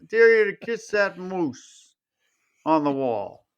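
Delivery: put-on stoner voice. Retelling a movie truth-or-dare scene, quoting the stoner's dare: Marty the stoner voice. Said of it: "I'm trying to do his voice".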